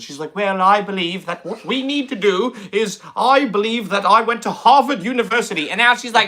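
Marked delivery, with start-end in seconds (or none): 0.4-5.7 light, put-on British accent. Imitating old videos of Jasmine Crockett: imitating Jasmine Crockett's near-British accent. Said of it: "practically has a British accent".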